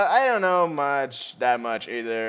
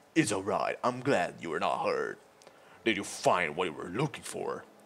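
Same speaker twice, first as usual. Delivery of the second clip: put-on heroic voice, much lower, much quieter; 8 semitones lower, 10 dB quieter than usual. Voicing a game's hero, comforting a frightened girl, in a heroic voice.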